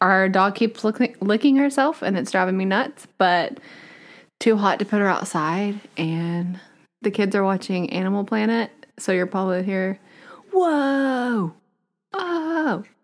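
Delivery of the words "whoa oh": put-on high, kid-style nature-host exclamation, light Australian accent. Imitating the kids' impression while they watch Animal Planet: imitating the kids' impression, a little Australian. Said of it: "that was the kid's impression".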